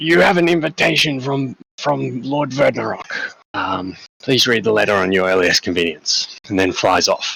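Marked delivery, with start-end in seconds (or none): 0.0-6.4 rasping, strange talking-bird voice like a crow. Voicing a crow that delivers an invitation: raspy, odd crow voice. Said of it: "the crow in like a really raspy, odd voice almost".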